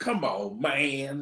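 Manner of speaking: put-on boozy voice, sounding a few drinks in. Retelling a story about Roaches, quote him imitating Roaches' boozy voice. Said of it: "Roaches hit him with that boozy voice".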